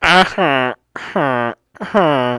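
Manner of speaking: imitated computerized speech voice. Imitating Stephen Hawking rolling into a writing room: Stephen Hawking voice. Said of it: "roll up and be like".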